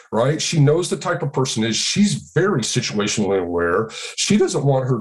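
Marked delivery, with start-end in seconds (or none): none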